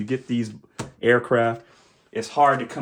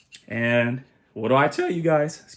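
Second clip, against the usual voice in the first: voice cracking partway through. Presenting a model stand unboxing to viewers, voice cracking. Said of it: "my voice cracked".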